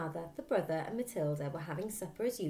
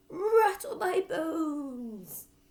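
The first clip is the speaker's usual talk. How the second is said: very high, loud, eerie spooky croak; 11 semitones higher, 7 dB louder than usual. Narrator reads the parrot repeating its phrase for Matilda: parrot imitating a spooky voice. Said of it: "giving a wondrous imitation of a spooky voice".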